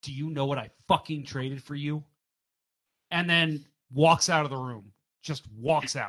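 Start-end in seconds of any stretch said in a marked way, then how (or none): 0.0-2.0 put-on forceful, mock-angry tone. Retelling what he said after banging his fist on the desk; retelling a forceful angry demand. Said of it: "he bangs his fist on the desk".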